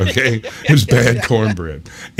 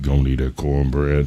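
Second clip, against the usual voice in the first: very low, deep, bullying, demanding voice; 8 semitones lower than usual. Retelling how a guy came over doing the Debo thing: imitating Debo from Friday. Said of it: "did the Debo thing where he's like".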